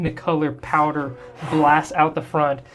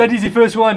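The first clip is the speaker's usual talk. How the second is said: higher, louder, fired-up excited commander yell. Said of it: "he's just getting excited to yell at the robots".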